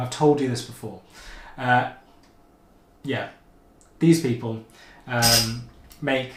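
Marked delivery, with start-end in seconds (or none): none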